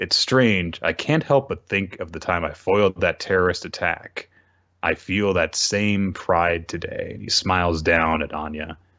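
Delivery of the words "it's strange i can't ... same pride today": ordinary talk, nothing marked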